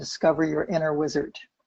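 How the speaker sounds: ordinary delivery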